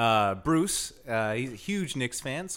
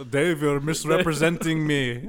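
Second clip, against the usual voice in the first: put-on ghost voice, higher and louder; 3 semitones higher, 7 dB louder than usual. Answering as a ghost who calls back about the story: Manute Bol's ghost voice. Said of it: "Manute Bowles' ghost?".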